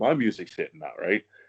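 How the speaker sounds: ordinary delivery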